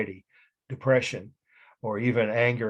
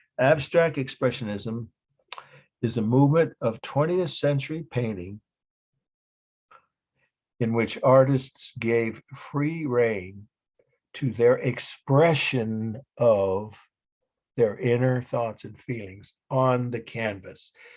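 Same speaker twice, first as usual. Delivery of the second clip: slow, careful, deliberate, word-by-word delivery. Repeating a definition for those who did not get it, speaking slowly. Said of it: "so I'll repeat it again slowly".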